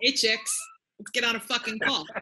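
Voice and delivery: high, swooping, put-on New York accent. Told you have to do it with a New York accent, saying the line in one. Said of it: "Apparently you have to do it with a New York accent also".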